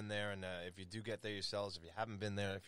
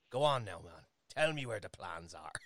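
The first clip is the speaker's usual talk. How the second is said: fake Irish accent, louder; 6 dB louder than usual. Imagining playing an Irish spy in a movie: put-on Irish accent. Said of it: "'cause I could put the accent on".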